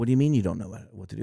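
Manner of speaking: scornful, super sarcastic, berating tone. Retelling a manager berating a new worker: imitating a super sarcastic manager. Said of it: "super sarcastic".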